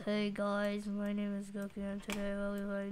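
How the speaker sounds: very low, very quiet, flat, unenthusiastic monotone. Showing how the intro would sound without enthusiasm: low, flat tone. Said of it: "talk in the microphone with a low tone".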